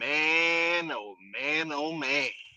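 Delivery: voice like a long, weary, drawn-out sigh. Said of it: "in my Peel voice".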